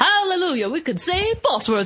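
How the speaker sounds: put-on high, childlike little-kid voice. Retelling a funny movie moment: imitating the mole kid's changed voice. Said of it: "He, like, just changes his voice".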